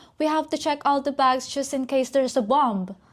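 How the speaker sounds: put-on shouted calling out. Retelling what the flight attendant shouted to the cabin: imitating the flight attendant shouting. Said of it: "And she shouted".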